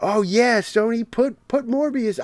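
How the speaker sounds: put-on sarcastic excitement. Imitating people online urging sony to re-release a movie: imitating sarcastic fans. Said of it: "very obviously being sarcastic".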